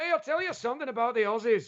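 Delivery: very high-pitched put-on Glaswegian woman's accent. Recalling an older Glaswegian woman's remarks to him, imitating a Glaswegian woman's accent. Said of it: "the sixty-five-year-old Glaswegian woman".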